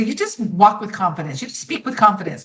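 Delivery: normal talking voice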